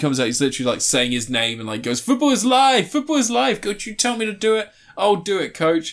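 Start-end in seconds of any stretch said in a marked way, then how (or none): 2.0-5.9 play-acted, very high, over-the-top relentlessly positive exclamations. Retelling a scene where a new player introduces himself: imitating a super positive player. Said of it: "he's super positive".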